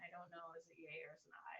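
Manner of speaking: soft, hushed whisper under the breath.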